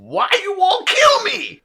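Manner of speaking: put-on very high, loud, agitated, rising, swooping voice. Retelling what a man said on walking up to the speaker, loud put-on voice. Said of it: "I can't do this voice without being loud".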